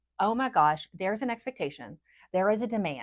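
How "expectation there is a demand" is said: ordinary talk, nothing marked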